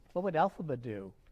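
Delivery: normal talking voice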